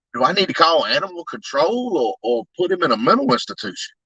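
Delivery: plain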